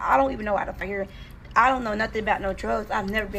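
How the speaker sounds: ordinary delivery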